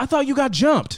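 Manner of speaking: play-acted yelling, very high pitched. Retelling what she yelled back after moving the getaway car, imitating her yelling. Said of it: "she yells back at me".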